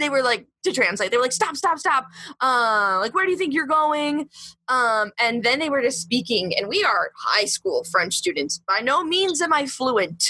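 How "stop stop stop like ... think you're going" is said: put-on firm yelling. Translating what the subway cops said while grabbing them: imitating police yelling. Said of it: "yelling at us".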